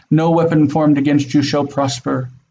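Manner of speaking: ordinary talk, nothing marked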